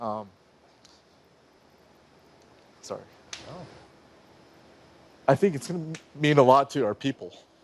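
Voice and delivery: moved, a little emotional, trying to hold together. Answering an interviewer's question about the moon landing, a little emotional. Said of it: "I get a little emotional about this".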